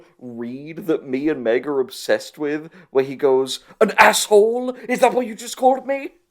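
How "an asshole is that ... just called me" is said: very high-pitched, fake put-on American accent. Quoting a favorite line read from a movie, Eddie's fake American accent. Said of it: "Irish actor putting on an American accent".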